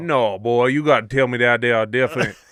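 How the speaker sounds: put-on Cajun accent. Speaking to the guys after living around a cajun accent, put-on cajun accent. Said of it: "that's not bad, [name]".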